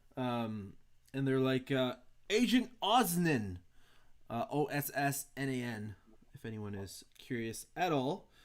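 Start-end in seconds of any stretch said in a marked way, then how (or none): 2.3-3.6 high-pitched hollering call. Voicing a scout trooper calling out to an officer: hollering. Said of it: "the scout trooper kinda hollers".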